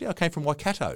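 put-on poor New Zealand accent. Retelling a woman's replies in a conversation: poor new zealand accent. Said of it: "That's a very poor New Zealand accent".

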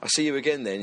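ordinary talk, nothing marked

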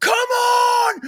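very high, shrill, loud scream with "on" stretched. Showing how people scream during games: high-pitched scream. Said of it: "it's a high pitch which doesn't carry the same weight".

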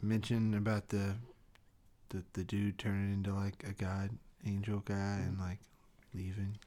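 soft, whispered, under the breath. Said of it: "go up to Jose and whisper".

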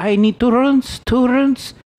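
put-on heavy Russian accent, very high and loud. Quoting a Russian lady, in a thick Russian accent. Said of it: "thick Russian accent".

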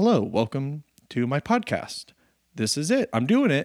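soft, laid-back, super-mellow, low-energy delivery. Trying out a podcast intro, super chill, mellow. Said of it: "super chill, super mellow?".

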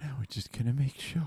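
high, creepy, hushed whisper. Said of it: "He's whispering".

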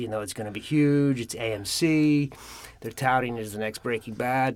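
normal talking voice

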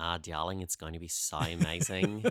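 put-on low, lilting Australian accent. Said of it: "which is my Australian accent".

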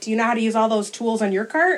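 mock sarcastic, snarky, quick, without missing a beat. Retelling what she said to him that day, retelling her snarky retort. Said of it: "in a very snarky place myself".

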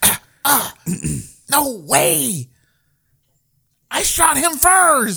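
very high, stretched-out, drawn-out cry. Retelling what a teammate says over the radio while playing: imitating Keith on the radio. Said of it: "That's what you hear on the radio".

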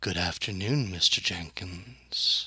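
gentle but confident tone. A game master voices a voice heard inside a player's head: very soft, assured voice. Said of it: "a very soft but very assured voice say".

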